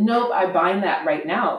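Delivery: ordinary delivery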